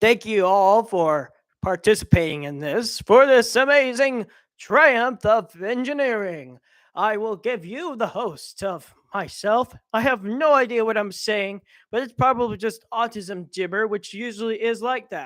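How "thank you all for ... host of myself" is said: delivered in an authoritative boss voice. Speaker thanking everyone for participating, sounding like Cave Johnson. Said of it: "I sound like Cave Johnson from Aperture".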